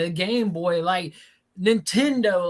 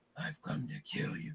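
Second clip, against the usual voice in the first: put-on deep menacing voice, lower and quieter; 3 semitones lower, 16 dB quieter than usual. Picturing a casting choice for Shadow, doing a deep Vin Diesel voice. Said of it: "that deep voice is just like".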